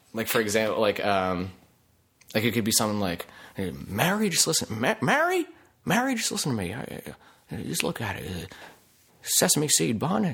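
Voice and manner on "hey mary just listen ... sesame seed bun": put-on stumbling, halting old-film style delivery. Showing a hushed monologue selling a burger: hushed Jimmy Stewart monologue. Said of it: "Jimmy Stewart could be telling me anything in a hushed monologue".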